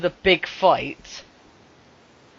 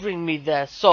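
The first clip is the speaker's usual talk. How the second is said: normal talking voice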